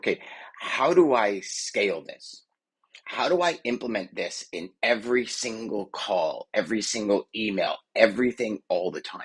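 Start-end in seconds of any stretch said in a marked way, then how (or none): none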